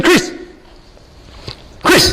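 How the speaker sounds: high, really loud shout. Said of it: "And he said it really loud".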